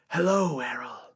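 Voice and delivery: rough, rasping, hoarse voice. Voicing an undead sister greeting Errol in a game master example: raspy voice. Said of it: "She speaks in a familiar, raspy voice".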